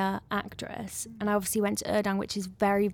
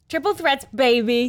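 loud, showy, fake American accent; 4 semitones higher, 7 dB louder than usual. Chatting about dance skills, put-on american accent. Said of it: "do you like my American accent there".

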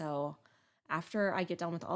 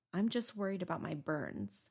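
put-on small, childlike young boy voice. Recalling a video, the speaker quotes what Gannon says: Gannon's little-boy voice. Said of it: "11-year-old boy voice".

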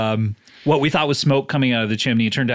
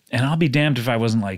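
plain

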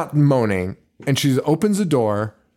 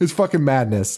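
normal talking voice

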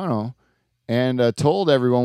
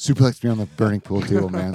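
whispering, lower; 4 semitones lower than usual. Retelling how a friend kept whispering a request: imitating Adrian whispering. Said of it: "he kept whispering to me".

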